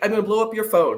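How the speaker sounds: plain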